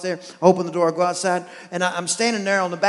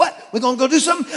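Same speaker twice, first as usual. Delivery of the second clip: put-on, super excited, high-energy eager dog voice; 7 semitones higher, 3 dB louder than usual. Telling his Jack Russell Terrier to come to him, imitating Hank the excited dog. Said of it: "super excited all the time".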